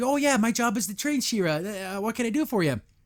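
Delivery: overjoyed, gleeful, super happy delivery. Retelling a cartoon scene where the character gets imitating someone super happy. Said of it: "super happy".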